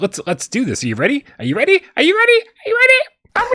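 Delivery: very high hype voice, rising and swooping. A host demonstrating the voice he uses when it's showtime, raised-pitch hype voice. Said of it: "I bring up the octave and I say".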